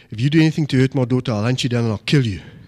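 put-on tearful serious tone. Retelling a father-in-law's warning before the wedding: imitating a tearful serious threat. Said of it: "tears streaming down his eyes".

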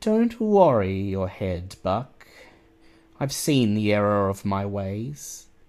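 lilting, sing-song voice rising and falling. A narrator voices Angel speaking to Buck, in a lilting Angel voice. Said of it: "in that lilting voice of yours says".

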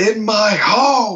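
put-on, very high, menacing mobster-style yell, long "home". Retelling quoting The Godfather to a cat: threatening Michael Corleone yelling. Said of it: "quoted The Godfather to your cat in a threatening manner".

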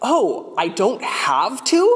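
slow, high, rising, surprised and amused voice.

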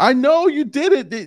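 high, desperate pleading voice. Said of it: "she's pleading with Michael".

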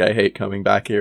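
usual speaking voice

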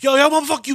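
nervous, twitchy tough-guy voice. Imitating someone making a threat with nervous energy: imitating a jittery threat. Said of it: "you're too jittery".

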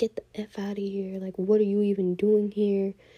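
loud, all-out screaming rant. Retelling how a big guy reacted at a party: imitating someone screaming. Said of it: "he just started screaming".

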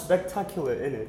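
bad, terrible put-on fake British accent. Joking during a chat about buying a flat, terrible british accent. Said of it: "You have a terrible British accent".

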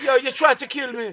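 put-on Jamaican accent, very high and loud. Voicing Bella after she threw up pork: Jamaican accent. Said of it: "does a Jamaican accent for everybody".

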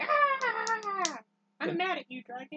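high, very slow yell, "Ah" stretched long. Imitating Jon Snow screaming at the dragon: imitating Jon Snow screaming. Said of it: "Jon stands up and screams at the dragon".

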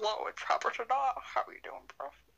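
put-on deep-pitched doll voice. Joking about calling at night pretending to be Robert: deep Robert voice. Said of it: "talk in a deeper voice when it was Robert's".

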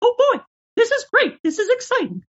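very high, squeaky, sing-song cartoon voice. Voicing a doll in front of the camera for comedy videos, in a Mickey Mouse voice. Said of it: "I would make voices like Mickey Mouse".

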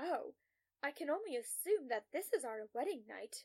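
ordinary delivery

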